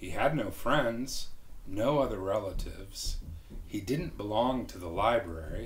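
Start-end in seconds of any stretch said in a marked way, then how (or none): none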